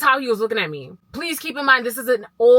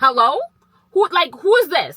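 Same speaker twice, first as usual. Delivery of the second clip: play-acted mad, angry, confrontational, demanding delivery; 5 semitones higher, 4 dB louder than usual. Retelling opening the door to a stranger: imitating herself angrily answering the door. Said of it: "I opened up the door mad as fuck".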